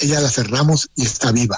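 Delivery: ordinary delivery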